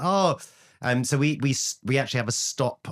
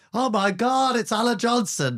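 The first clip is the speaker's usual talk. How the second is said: mock thrilled, very high and slow; 12 semitones higher than usual. Recalling a first series when the producer named a politician: retelling excited announcement. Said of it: "and I go".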